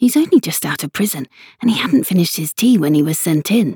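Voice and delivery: hushed whispering. Narrator reads a messenger whispering to Alice about the other messenger: whispered. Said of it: "Haya whispered to Alice".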